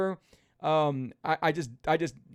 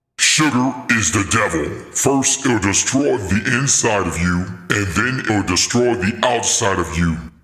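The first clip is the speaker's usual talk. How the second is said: very deep, very loud, booming, menacing voice; 9 semitones lower, 9 dB louder than usual. Performing his anti-sugar line for a social media video, in a scary voice. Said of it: "that's a scary voice".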